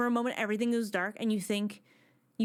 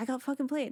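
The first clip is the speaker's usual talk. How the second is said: acted angry character voice; 3 semitones higher than usual. Acting out a character who realizes he was tricked: angry character. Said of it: "he gets pissed".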